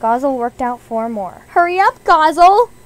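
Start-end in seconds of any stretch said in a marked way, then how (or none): 1.5-2.7 loud, high yell at very full volume. A student yells to classmate Gozzle during a test; yelling. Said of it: "Yelled Izzmalookie".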